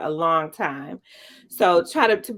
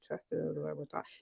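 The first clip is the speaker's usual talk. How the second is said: hushed half-whisper, under the breath, to oneself; 3 semitones lower, 17 dB quieter than usual. Showing what is said to oneself in a hard moment: imitating own half-whisper. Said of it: "whispering under my breath".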